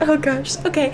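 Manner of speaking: all in a fluster, rattled. Narrating a scene, voicing a woman who leads the group upstairs, flustered. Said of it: "very flustered".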